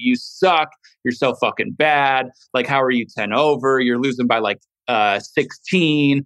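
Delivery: ordinary delivery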